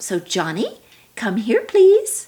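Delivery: friendly, upward-rising tone. Demonstrating a dignified way to call someone over, pleasant, rising pitch. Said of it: "See how your voice went up?".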